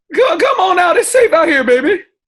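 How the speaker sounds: very high, loud, carrying call-out. A player's character calls into a house after a fight with orcs, yelling into the house. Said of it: "I'm gonna yell into the house".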